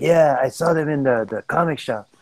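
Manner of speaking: imitated Mexican accent. Speaker retells what Freddy said, imitating Freddy's Mexican accent. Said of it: "you know how Freddy's talks with his Mexican accent".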